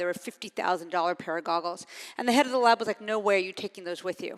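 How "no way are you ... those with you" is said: plain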